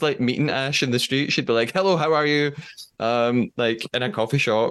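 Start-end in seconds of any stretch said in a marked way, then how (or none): 1.7-2.5 mock unnecessarily assertive, pitched-up delivery. Imagining Ash greeting someone in the street: imitating someone speaking assertively. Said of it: "says everything really assertively".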